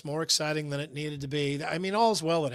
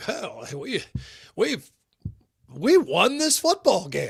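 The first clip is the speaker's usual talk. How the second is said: mock stunned radio-call tone, exhaling in disbelief; 3 semitones higher, 4 dB louder than usual. Retelling how the radio call of the final kick sounded: imitating Pat Angerer sounding surprised. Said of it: "a tone in his voice that sounded surprised".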